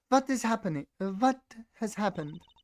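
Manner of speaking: high-pitched put-on female voice. Copying a famous YouTube video, voicing the next character: more female voice. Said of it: "Now I need to make it a little more female".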